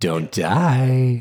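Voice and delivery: menacing, ominous, sinister tone, die drawn out. Redoing a sign-off line to sound more sinister: sinister. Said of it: "I want to say that more sinister".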